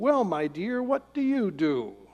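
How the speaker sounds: rather condescending, patronizing, talking-down tone. Retelling a woman at a party questioning a man's wife, mock-condescending tone. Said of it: "in a rather condescending tone".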